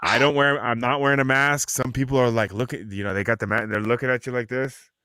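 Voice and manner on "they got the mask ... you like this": usual speaking voice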